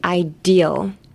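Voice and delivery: ideal with stress on the de syllable. Teaching how to say the english word ideal, stress on de in ideal. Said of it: "emphasis on the D".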